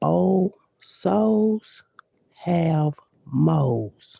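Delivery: very slow, deliberate, each word laid down separately. Addressing people, the speaker says this very slowly. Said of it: "let me say this real slow".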